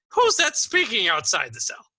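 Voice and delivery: put-on surprised old man calling out, high and loud. Narrating a scene, voicing an old man in a cell exclaiming in surprise. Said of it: "as he exclaims in surprise".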